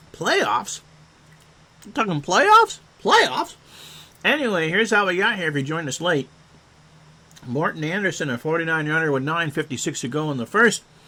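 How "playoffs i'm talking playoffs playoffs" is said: words mashed around food while chewing, pitched up. Caught with a mouthful of food while talking to listeners, talking with mouth full. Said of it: "you caught me with a mouthful of food".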